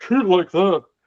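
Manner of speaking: casual, tossed-off British comedian-style voice. Quoting a line said on British television: Noel Fielding impression. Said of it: "That was my Noel Fielding impression".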